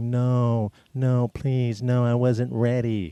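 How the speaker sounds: very slow, drawn-out, sad pleading. Retelling acting out a sad plea after a fake firing: retelling acting sad. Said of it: "I started acting real sad".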